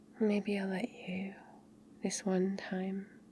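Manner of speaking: very quiet, hushed, soft-spoken, under the breath. Responding to a listener's demand, speaking quietly.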